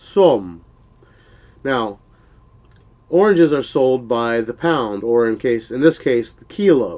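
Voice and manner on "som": som with pitch falling from high to low. Thai lesson on the word for oranges, falling tone on som. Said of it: "falling tone".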